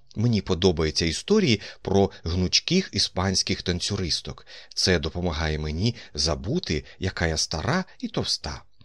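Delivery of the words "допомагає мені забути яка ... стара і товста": ordinary delivery, nothing marked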